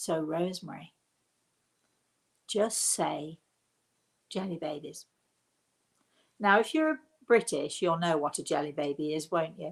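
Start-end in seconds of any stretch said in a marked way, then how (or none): 0.0-5.1 secretive, conspiratorial, hushed stage whisper. Retelling what a spirit half-whispered: imitating a conspiratorial half-whisper. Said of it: "whispered to me conspiratorially".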